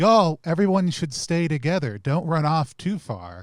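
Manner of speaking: loud, charming, sweet-talking call-out. Calling after fleeing players while wearing a deer mask: charming calling-out voice. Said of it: "calling out in my most charming voice".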